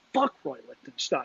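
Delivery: acted muttering under breath. Retelling walking past a guy in a shirt: imitating muttering under breath. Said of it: "muttered under my breath".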